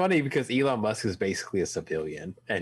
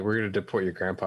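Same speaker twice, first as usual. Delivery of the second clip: normal talking voice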